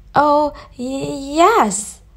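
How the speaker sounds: nervous. Narrator reading the answer to the queen's question, nervous reply. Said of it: "Alice nervously replied".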